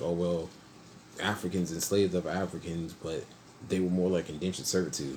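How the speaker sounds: normal talking voice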